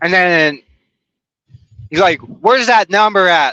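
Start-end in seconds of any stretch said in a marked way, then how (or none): 2.2-3.5 high-pitched mild yell. Retelling a man demanding a phone number, imitating someone screaming. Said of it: "just top of his lungs, screaming at me".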